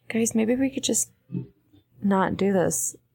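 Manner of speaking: voice kept low. A player's character addresses the group in a low voice. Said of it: "I would want to say it in like a low voice".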